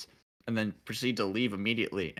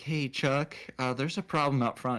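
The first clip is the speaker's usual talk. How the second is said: put-on small, meek, timid kid voice, pitched up; 5 semitones higher than usual. Retelling telling the manager about a problem: imitating own meek past self. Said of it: "I'm this meek little fucking kid".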